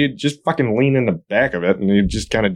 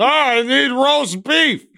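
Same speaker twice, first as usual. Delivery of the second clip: very high, shrill, furious shouting; 13 semitones higher than usual. A customer repeats an order to an automated store system, angry yelling. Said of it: "Please lower your voice".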